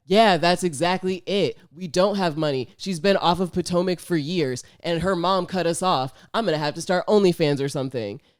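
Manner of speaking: dry, joking, tongue-in-cheek sarcastic delivery. Retelling a man's joking reply to her question; mock sarcastic, joking tone. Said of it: "jokingly and sarcastic".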